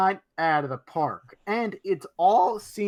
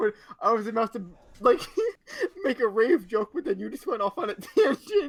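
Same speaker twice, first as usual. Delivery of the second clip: words fighting off a laugh, laughter held back; 4 semitones higher than usual. Speaker responding after the other speaker's tangent: holding back laughter. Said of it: "I gotta stop laughing".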